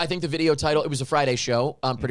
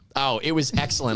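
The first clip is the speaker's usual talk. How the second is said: normal talking voice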